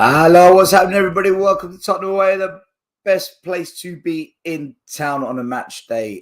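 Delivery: croaky, high voice. Host welcoming everybody to the Tottenham Away show on match day, croaky voice. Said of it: "my voice sounds a little bit croaky".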